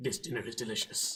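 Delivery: very deep, low, monstrous beast growl, sounding distant. Narrator voicing a voice the players hear off in the distance, very deep growl. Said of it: "in a very deep growl".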